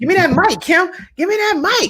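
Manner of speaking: high, eager, demanding voice. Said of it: "they like".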